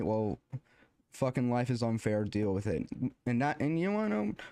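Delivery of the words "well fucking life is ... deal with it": ordinary talk, nothing marked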